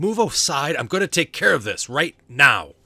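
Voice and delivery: booming, loud, high-pitched, defiant delivery. A storyteller voices a man standing defiantly against a player's character: defiant. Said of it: "standing there defiantly at you".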